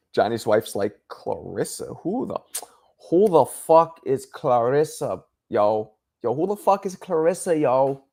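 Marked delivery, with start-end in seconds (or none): 1.1-8.0 very slow, dragged-out, demanding tone. Acting out Johnny's wife asking who Clarissa is: imitating Johnny's wife. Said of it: "I'm sure your wife doesn't sound like that".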